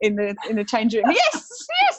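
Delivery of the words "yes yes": high, loud ecstatic shout. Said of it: "you used to hear me shout".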